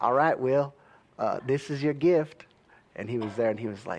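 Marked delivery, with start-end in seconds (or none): 0.0-2.5 clumsy, bad put-on southern US accent. Retelling a dad giving his son will a gift: bad southern us accent. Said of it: "I can't do a real good southern accent".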